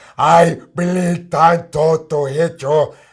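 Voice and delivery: booming, very loud, intimidating, scary bellowing voice. Joking about a basketball player blocking shots, imitating Dikembe Mutombo. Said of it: "Remember Mutombo was the scariest African".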